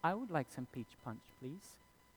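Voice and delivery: put-on soft, sweet, quick child voice. Retelling what Little Gabe ordered to drink, in a sweet voice imitating Little Gabe. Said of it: "As sweet as you have ever heard".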